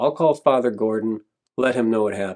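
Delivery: ordinary talk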